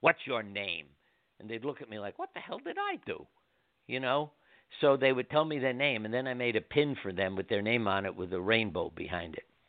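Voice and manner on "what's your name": put-on gruff voice. Recalling walking up to hospital workers, he asks their name: retelling a gruff question. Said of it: "I'd walk up and gruffly say".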